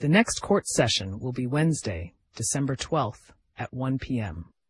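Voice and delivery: ordinary delivery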